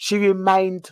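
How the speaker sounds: ordinary delivery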